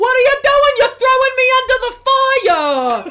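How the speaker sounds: very loud, very high yelling outburst, drawn-out "the". Retelling how a man on the show gets loud: imitating someone getting loud. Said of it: "he gets very loud".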